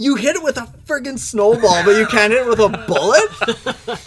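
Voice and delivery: put-on shrill, very high-pitched, loud yelling. Retelling yelling at a companion who missed a goat, retelling a yell. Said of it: "And I was like yelling at him".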